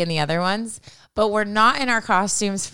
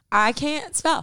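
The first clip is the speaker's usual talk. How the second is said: slow, higher, unbothered, self-assured tone. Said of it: "to just be like".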